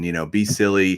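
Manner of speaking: ordinary talk, nothing marked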